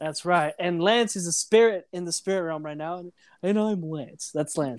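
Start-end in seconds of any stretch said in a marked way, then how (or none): 3.4-4.8 half-hearted attempt at a seductive, sexy voice. Podcast host closing the episode, standing in for the absent Lance: attempted sexy voice as Lance. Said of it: "I'm trying to do the sexy voice".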